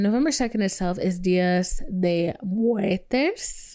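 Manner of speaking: slow, with voice crack. Talking to viewers about a birthday and pre-ordering merch: voice cracking. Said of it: "my voice just cracked like a prepubescent boy".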